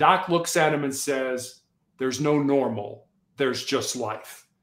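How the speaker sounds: ordinary talk, nothing marked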